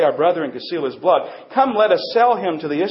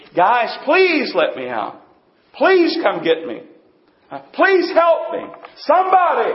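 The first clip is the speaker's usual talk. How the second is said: mock desperate, high, anguished begging; 8 semitones higher than usual. Acting out a prisoner in a pit begging for mercy: imitating Joseph begging in anguish. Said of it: "He's crying out in anguish".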